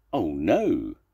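with a groan. Narrator reading a story, Zebra answering Mrs. Duck, groaning. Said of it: "groaned Zebra".

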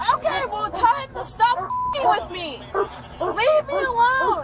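slow, high-pitched screaming.

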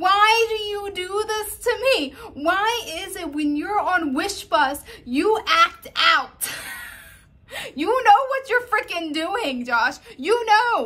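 very high, very loud yelling. Staring at a man on camera and yelling as if he were here: yelling at him. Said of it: "I'm yelling at him like he's right here".

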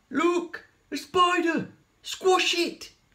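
very high, shrill, stretched-out scream. Someone spots a spider that has let go of its thread; screaming. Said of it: "screamed someone".

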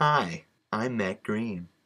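weird, unnatural, slow way of talking. Trying another take at introducing himself: strange way of talking. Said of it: "Why am I talking like this?".

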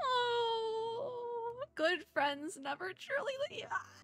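weeping through words, very high and very slow. A streamer reading quest text aloud during a game, crying. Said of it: "I'm crying".

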